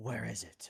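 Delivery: ringing demonic voice. In a vision of a town in panic, a demon speaks: Demon Batman demonic voice. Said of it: "As this demonic voice rings out".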